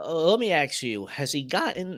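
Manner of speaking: high-pitched voice cracking and breaking. Asking someone about a game character's weapons: voice cracking. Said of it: "I don't know why my voice cracked".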